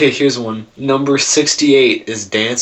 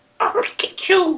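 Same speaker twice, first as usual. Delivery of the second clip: put-on witch voice, much higher in pitch; 3 dB quieter than usual. Comparing a mean lady's voice to a witch: Wizard of Oz witch voice. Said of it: "Or like the witch".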